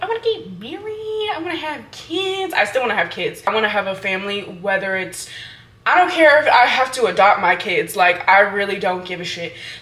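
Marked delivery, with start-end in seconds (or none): 0.0-2.5 high-pitched, younger-sounding voice. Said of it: "I was like".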